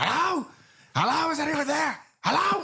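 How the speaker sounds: frantic, very high-pitched screaming, calling out. Recount a film scene at a gas station, imitating Donald Pleasence screaming frantically as he gets out. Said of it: "he's just like screaming, and he's like frantic".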